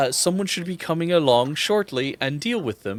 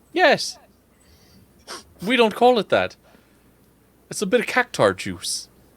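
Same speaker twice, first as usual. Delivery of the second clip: wavering, wandering attempt at an Irish accent; 6 semitones higher than usual. Voicing a character offering a strong liquor: put-on Irish-ish accent. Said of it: "I don't know what this accent is anymore".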